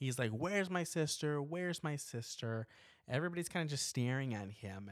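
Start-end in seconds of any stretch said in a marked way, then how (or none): 0.3-2.7 put-on demanding yell, slow, deliberately said twice. Retelling a film scene where a man bursts in: imitating someone yelling.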